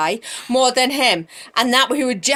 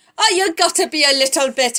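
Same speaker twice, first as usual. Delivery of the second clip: muddled, put-on Scottish-y Indian accent; 4 semitones higher than usual. Acting out the Esther story as her cousin, Mordecai in Scottish-y Indian accent. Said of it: "I think I'm Scottish-y Indian".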